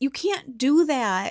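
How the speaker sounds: put-on upset, dismayed, high, drawn-out voice. Recounting a couple's exchange, quoting the man's reply; retelling an upset protest. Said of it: "he's very upset about it".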